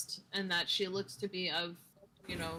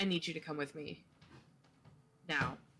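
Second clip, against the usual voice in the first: soft, hushed, rushed, insistent urgent tone; 2 semitones lower than usual. Playing a character who takes someone's wrists, very quiet urgent voice. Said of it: "very, very, very quietly be like".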